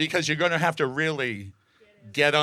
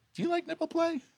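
high, put-on flirty stranger voice. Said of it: "they're like".

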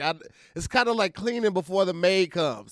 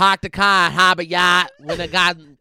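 speech in a Boston accent; 8 dB louder than usual. Demonstrating a sentence of Boston place names, in a Boston accent. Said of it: "And now that is part of the Boston accent".

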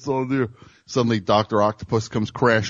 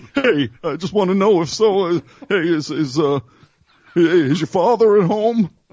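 put-on kid voice; 7 semitones higher, 4 dB louder than usual. Showing the voice kids use doing prank phone calls, kid prank-call voice. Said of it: "That's the sound you have in your voice when you're a kid doing prank phone calls".

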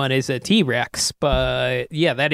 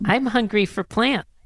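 put-on high, cute little baby character voice; 7 semitones higher than usual. Asked to do a little for the others, performing the baby Aladar voice. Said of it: "do a little of your baby Aladar for us".

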